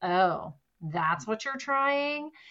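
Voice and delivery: put-on scornful, disdainful, sneering mean-girl tone. Imitating the inner mean girl when you try something new: imitating a disdainful tone. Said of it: "that kind of disdainful tone in her voice".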